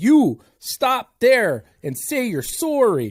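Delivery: put-on tough, loud, slow man's voice with Canadian accent. Telling a joke about a canadian confronting a moose, strong canadian guy voice. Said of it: "one strong Canadian that says".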